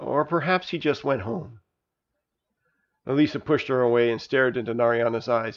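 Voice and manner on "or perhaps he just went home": soft, hushed half-whisper under the breath. Narayana puts her arm around the sobbing girl and half-whispers.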